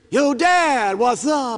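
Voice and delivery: put-on teenage kid voice. Retelling how the kids greeted him as teenagers: imitating teenage kids. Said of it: "They got to be teenagers".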